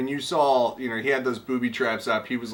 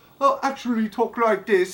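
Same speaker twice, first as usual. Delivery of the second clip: mock British accent, higher; 10 semitones higher than usual. Imitating actors who really speak differently off the show: put-on British accent. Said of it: "a British accent".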